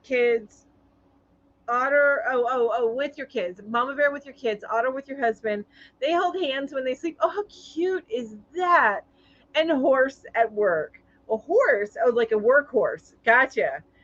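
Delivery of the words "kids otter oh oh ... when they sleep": ordinary talk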